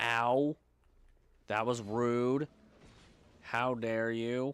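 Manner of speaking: almost monotone, flat, barely inflected pitch. Reacting to being knocked off a bridge in a game: almost monotone. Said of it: "I almost sound monotone in doing this".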